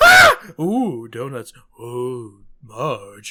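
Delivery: loud, deep, slow bellowing with big swooping swings. Explaining why one voice is hard to do, demonstrating its shifting emotions; Homer voice. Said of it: "it's hard to do that voice".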